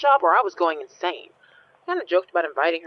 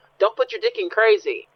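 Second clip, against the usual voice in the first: loud, wild, raving woman's scream; 4 semitones higher than usual. Retelling what a woman screamed while her body twisted: imitating a woman screaming. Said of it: "all the while she's screaming".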